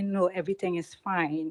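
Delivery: plain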